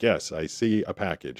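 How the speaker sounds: slow robot lady voice, AI assistant style. Retelling what the ai assistant answered: imitating a robot lady voice. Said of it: "the robot lady is like".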